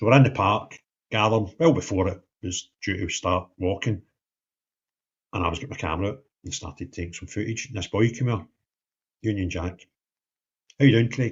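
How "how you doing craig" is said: put-on Edinburgh accent, higher and louder. Retelling how a boy greeted him at a march: imitating an Edinburgh accent. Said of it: "Edinburgh accent".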